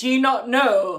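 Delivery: put-on hostile, loud, aggressive voice. Retelling what he said loudly in front of everyone on the bus: imitating a loud aggressive remark. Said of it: "he said it really loudly".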